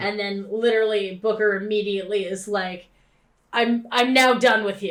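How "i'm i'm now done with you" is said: put-on fed-up character voice. Recapping a game scene to a co-host, imitating Booker's fed-up tone. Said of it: "his tone of voice changes".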